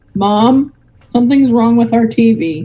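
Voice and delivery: plain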